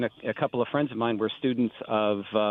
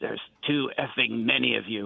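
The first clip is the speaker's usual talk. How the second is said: acted rough, gravelly voice. Retelling how Lenny greeted a young conductor: imitating Lenny's gravelly voice. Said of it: "In a real gravelly voice".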